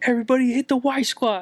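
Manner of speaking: high, loud yelling voice. Retelling a man who came in yelling orders at the group, imitating a yell. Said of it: "he starts yelling at us".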